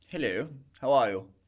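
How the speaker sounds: put-on proper London gentleman accent. Putting on a London accent to greet the other speaker: put-on London gentleman accent. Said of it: "you're a proper London gentleman".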